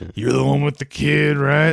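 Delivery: really rough, gruff voice. Retelling own past words to another speaker in a really gruff voice. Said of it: "I said a really gruff voice".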